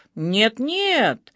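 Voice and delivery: sharp, sharply protesting tone. The detective cuts in, refusing the suggestion: sharp objection. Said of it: "резко возразил он".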